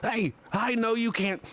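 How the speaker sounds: high-pitched, squeaky little golem voice. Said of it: "He goes".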